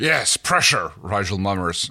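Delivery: plain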